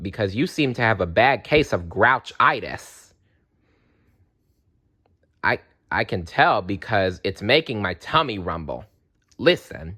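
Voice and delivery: ordinary talk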